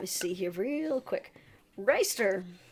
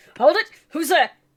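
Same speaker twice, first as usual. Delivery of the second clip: very loud, booming, high-pitched bellow; 8 semitones higher, 11 dB louder than usual. Game master voicing someone atop the gates challenging arriving travelers, bellowing. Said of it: "you hear a voice bellow out at you".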